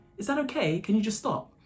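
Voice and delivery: annoyed, scolding tone. Retelling what somebody behind her at a carol service said: imitating someone's angry tone. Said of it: "in an angry tone".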